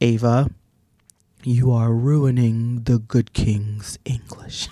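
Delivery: really deep voice, dropped low. Recalling childhood, the speaker quotes her mother, imitating mother's deep voice. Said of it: "my mother had a really deep voice".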